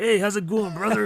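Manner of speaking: thick put-on New Jersey accent. Speaker imitates a camp counselor from a movie, New Jersey accent. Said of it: "real, real New Jersey like".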